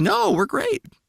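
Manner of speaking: very high voice lurching sharply upward. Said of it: "Your voice go up like that?".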